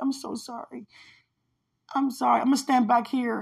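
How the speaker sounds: sobbing, tearful, crying voice. Retelling a dream in which a person apologized: imitating someone crying. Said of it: "this person was really crying".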